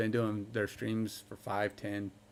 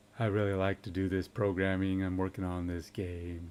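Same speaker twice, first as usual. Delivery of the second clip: deep, low, smooth put-on voice; 4 semitones lower, 6 dB quieter than usual.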